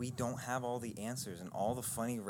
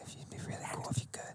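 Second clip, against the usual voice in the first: whispering in a hushed voice. Asking about free Netflix subscriptions after being told to whisper, whispering. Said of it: "You have to whisper".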